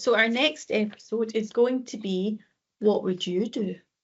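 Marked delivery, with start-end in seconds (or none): 2.8-3.8 gentle, very soothing, calming delivery. Announcing the next episode, in a very soothing tone. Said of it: "you said it in a very uh soothing tone".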